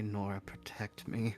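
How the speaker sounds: soft, barely voiced mutter under the breath. In a role-play scene, a character speaks aside to an ally: muttered under his breath. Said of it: "Un- under his breath".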